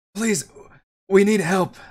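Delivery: raspy, high, loud feminine voice. Narrating the game, a dwarf calls out after nearly running into you: Runa's raspy feminine voice. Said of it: "in a raspy feminine voice".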